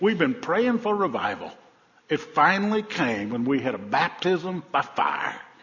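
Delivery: put-on broad Georgia accent, laid on thick. Retelling a woman's answer to a tv reporter, in a thick georgia accent. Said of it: "her thick Georgia accent".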